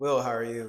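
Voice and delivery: flat, dry tone. Opening the show, asking the co-host how he is, with a dry delivery. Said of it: "You said it so dry".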